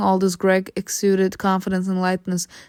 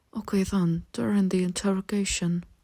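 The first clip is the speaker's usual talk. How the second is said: low, hushed, quiet voice; 7 dB quieter than usual. Reading a story, Greg leans closer to the narrator and speaks; low voice. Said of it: "speaking in a low voice".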